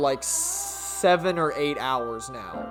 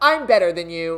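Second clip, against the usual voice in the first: put-on pompous snobbish voice. Recalling the voice once given to Aiba while playing: put-on pompous Aiba voice. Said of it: "a pompish voice".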